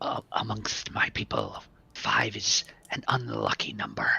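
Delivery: hushed, secretive, conspiratorial aside. A character turns to the rest of the group, in a quiet conspiratorial tone. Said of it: "like in a conspiratorial tone".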